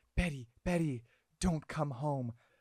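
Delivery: imitated whispering voice. Retelling how Alice calls Betty on the phone: imitating someone whispering. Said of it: "she's whispering into the phone".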